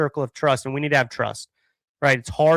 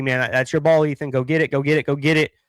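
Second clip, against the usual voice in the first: ordinary talk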